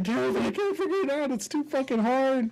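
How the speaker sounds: put-on high, wailing crying young child voice.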